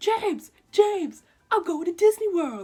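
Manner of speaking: very loud, high, thrilled, excited yell. Retelling how you yelled to your little brother james, reenacting an excited yell. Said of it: "I'm like yelling at my little brother".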